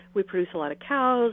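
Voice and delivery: ordinary talk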